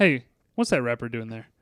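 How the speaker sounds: low, stern voice. Quoting the stern Caddyshack caddy manager: stern Brian Doyle Murray caddy manager. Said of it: "kinda stern with them".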